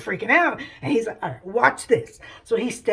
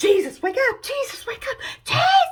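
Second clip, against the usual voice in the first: play-acted very high, frantic, panicked shouting; 3 dB louder than usual. Retelling a Bible story, the disciples in a storm: imitating panicked disciples shouting. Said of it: "everybody freaks out, and they're like".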